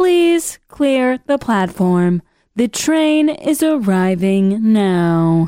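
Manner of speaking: slow, recorded train-station PA announcement voice. Comparing a woman's voice to station recordings, the speaker imitates them: train station announcement voice. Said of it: "She sounds like the recordings when you're at the train station".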